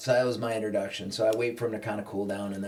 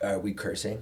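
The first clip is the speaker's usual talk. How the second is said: ordinary talk, nothing marked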